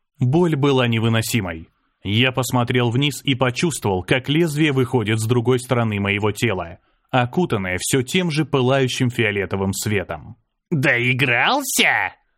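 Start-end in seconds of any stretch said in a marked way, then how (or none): 10.7-12.1 mocking, jeering, taunting tone. An old woman who has stabbed the narrator asks him, mocking. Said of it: "насмешливо спросила старуха".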